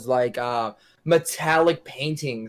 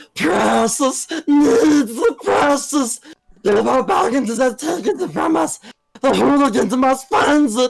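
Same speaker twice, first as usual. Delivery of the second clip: raspy creature voice, much higher, louder; 12 semitones higher, 5 dB louder than usual. Urged by friends to do Gollum, a player performs it quickly; Gollum impression. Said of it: "Do it".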